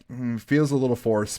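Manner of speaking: ordinary talk, nothing marked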